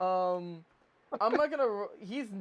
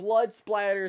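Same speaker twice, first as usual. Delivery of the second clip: normal talking voice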